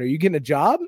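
usual speaking voice

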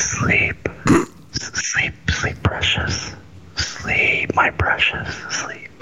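mock soft low asmr voice. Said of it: "We can talk real low".

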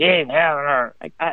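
sour, put-out grumpy tone, dropped low. Retelling what Alpha says when first coming to get her, in Alpha's grumpy voice. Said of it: "it was that grumpy voice".

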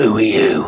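loud, hoarse, husky voice. Narrator reading a story where a head at the door speaks; husky voice. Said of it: "the head inquired in a husky voice".

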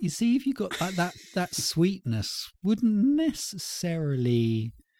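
high-pitched, dreamy musing voice.

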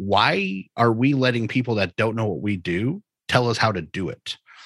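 normal talking voice

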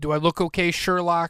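put-on snide, smart-aleck New York accent. Retelling a city worker asking if he's okay and the reply, Lomax in New York accent. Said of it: "giving Lomax such a New York accent".

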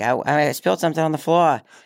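put-on high, little-kid Boston accent. Retelling how they spoke as a kid: childhood Boston accent. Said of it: "speech impediment that was pretty much just a Boston accent".

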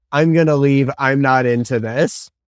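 put-on deadpan character voice. Recapping a movie scene where two characters make out, imitating Jesse going deadpan. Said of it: "Jesse just goes deadpan".

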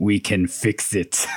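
very slow, weighty, deliberate, drawn-out words. Retelling the punchline of a deleted movie scene: Arnold Schwarzenegger voice. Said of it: "in Arnold Schwarzenegger's voice".

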